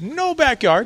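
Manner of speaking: high, salesy realtor voice.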